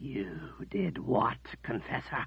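dangerous, menacing, threatening whisper. Zed confronts the confessor in a silent room, in a dangerous whisper. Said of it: "Zed's voice came in a dangerous whisper".

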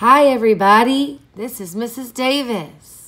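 very loud, slow sharing voice. Teacher showing the level-three voice for sharing with the whole class, sharing voice. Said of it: "That's a sharing voice".

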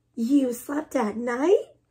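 gasping. Reading another bat reacting to a young bat's story: gasped. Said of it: "gasped another".

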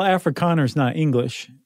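plain

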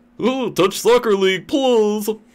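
silly, very high cartoon-dog whine. Mocking a chat user's complaints, the speaker does: Goofy impression. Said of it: "I could do my Goofy impersonation".

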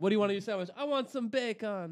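put-on Jamaican accent. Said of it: "saying bacon in a Jamaican accent".

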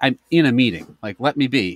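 ordinary talk, nothing marked

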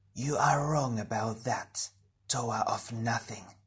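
hissing, sibilant voice. Narrating a story, the creature's mind voice answers the Toa, hissing. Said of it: "the mind voice hissed".

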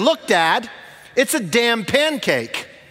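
very slow, high, drawn-out, loud proclaiming voice. Retelling his son's declaration as they sat with their food, loud outside voice. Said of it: "in his outside voice".

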